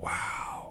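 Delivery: wow whispered in awe. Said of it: "you go".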